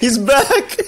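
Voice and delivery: mock-delighted, high, loud gushing voice.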